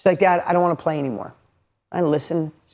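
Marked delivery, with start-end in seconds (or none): 0.2-1.3 put-on tearful, crying voice. Retelling a daughter's words in a parking lot: imitating a crying daughter. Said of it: "She breaks down and starts crying".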